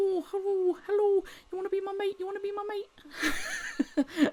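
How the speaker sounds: very high, persistent courting pigeon voice. Describing an improv game of voicing pigeons, courting male pigeon voice. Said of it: "a pigeon following this female one around and saying".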